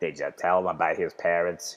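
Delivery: weird, super cartoony evil voice, low. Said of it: "He's got like this weird voice".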